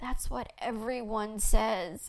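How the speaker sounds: in a moan. Narrator answering the woman tending the food who reassures her, moaning. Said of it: "I moaned".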